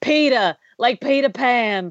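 mock slow, deliberate, plainly spelled-out delivery. Retelling what a man said to his wife during a movie: imitating a full-volume remark. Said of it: "literally at full volume says to his wife".

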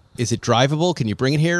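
ordinary delivery

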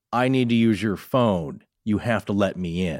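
mock, toneless, flat, insistent, demanding monotone. Describing strange children at a door asking to come in: imitating flat demanding monotone. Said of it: "It's demanding".

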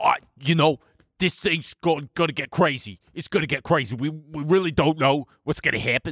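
super strong East Coast guy voice. Imitating a guy on TikTok for your co-speaker, in a super East Coast guy voice. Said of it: "who's like this super East Coast guy".

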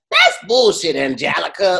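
weird small voice, creaky and swooping. Retelling a cartoon kid calling Angelica out: Susie's weird little voice. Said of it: "she had a weird little voice".

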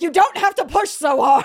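loud, high, passive aggressive mock scolding shout.

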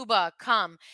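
usual speaking voice

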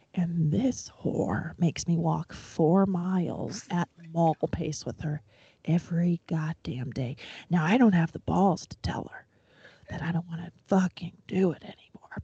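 hushed, slow whisper. Speaking to Lorraine about the daily walks, whispering. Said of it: "I'm gonna whisper this".

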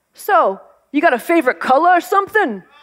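put-on New York accent. Retelling the date's question as they walk at the end, New York accent. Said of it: "with his New York accent and he says".

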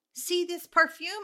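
cute, very high, put-on little Russian accent. Telling a story about a shop clerk, doing her voice with an accent. imitating a russian accent. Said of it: "she had the cutest little accent. She was Russian".

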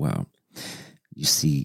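low, slow, dragged-out unhurried drawl. Describing how a man talks, the speaker imitates him: imitating a slow talker. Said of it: "he's very like talking slow. Like this".

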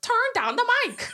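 put-on bad Italian accent. Retelling a movie scene where Isabella cuts a mic: imitating Isabella's terrible Italian accent. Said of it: "she has a terrible Italian accent".

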